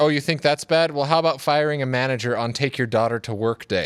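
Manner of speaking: ordinary talk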